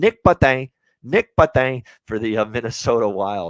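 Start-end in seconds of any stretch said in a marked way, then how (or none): 0.0-1.8 very loud, high, put-on French accent. Discussing a Minnesota Wild player, saying his name in a French accent. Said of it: "I love saying his name in the French accent".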